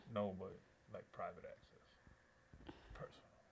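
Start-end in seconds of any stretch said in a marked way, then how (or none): 1.1-3.2 low, soft, secretive whisper. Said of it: "Why are you saying it like that?".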